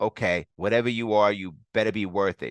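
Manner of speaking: ordinary delivery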